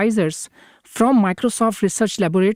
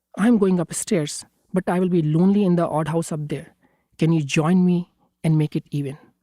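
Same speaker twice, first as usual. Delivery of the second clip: put-on sad, lonely-sounding tone; 3 semitones lower than usual. A father retells coaxing his child upstairs, putting on a sad voice. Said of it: "in a sad voice".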